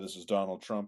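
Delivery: ordinary talk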